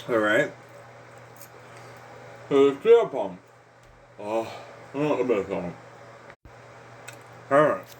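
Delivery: speaking while chewing food. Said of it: "I'm eating steak".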